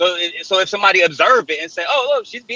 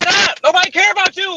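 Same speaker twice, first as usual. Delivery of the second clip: screaming furiously at top of lungs, higher; 12 semitones higher than usual. Arguing on a group call about someone demanding an apology: screaming at the top of lungs. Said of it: "You screaming at the top of your lungs".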